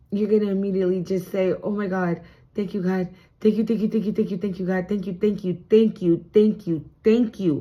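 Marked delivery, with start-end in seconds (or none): 1.6-7.6 mock emotional, overwhelmed thankfulness. Acting out a reading client's future reaction to good news: acting out emotional gratitude. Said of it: "you're gonna get emotional and you're gonna immediately have gratitude".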